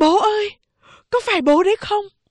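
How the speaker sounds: loud, very high called-out shout. Tư mã lương, the son, calls out loudly to his returned father. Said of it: "Tư Mã Lương kêu to".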